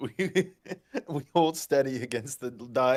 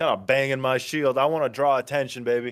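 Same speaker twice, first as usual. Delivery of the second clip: plain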